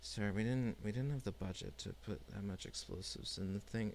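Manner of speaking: speaking very quietly. Voicing someone heard through a door: speaking very quietly. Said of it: "very, very, uh, quietly".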